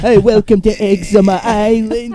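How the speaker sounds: very high, slow, drawn-out comedy voice. Joking about an island name, doing a Jordan Bench impression. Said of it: "you're doing a Jordan Bench impression there".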